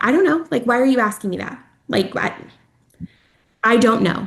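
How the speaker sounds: put-on irritable, cutting, harsh angry snap. Mother recalling her reply when her husband asked about dinner, imitating a harsh angry reply. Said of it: "were just so harsh and angry".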